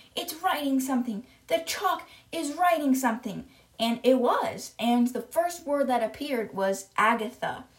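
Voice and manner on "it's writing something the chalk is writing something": mild, held-in scream, play-acted in the voice. Retelling a classroom story, acting out Nigel imitating a scream at the top of his lungs. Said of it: "screaming at the top of his lungs".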